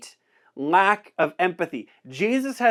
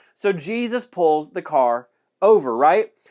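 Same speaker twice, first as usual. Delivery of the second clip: usual speaking voice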